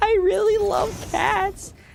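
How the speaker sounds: mock crying voice. Imitating the cat lady from a video: imitating someone crying. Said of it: "she's like, crying".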